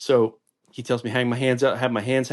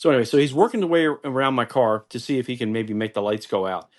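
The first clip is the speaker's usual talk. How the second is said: normal talking voice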